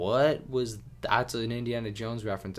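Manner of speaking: normal talking voice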